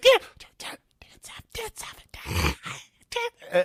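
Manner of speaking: odd, breathy, repeated whispering. Recalling seeing a celebrity on Capitol Hill, the speaker retells a weird whisper. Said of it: "weird whispering".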